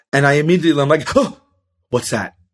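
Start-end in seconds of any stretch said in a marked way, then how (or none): 1.1-2.3 mock frightened, spooked, jumpy, startled voice. Recounting hearing a rustle when the wind blew: acting out past fright. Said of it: "at such a heightened level of fear".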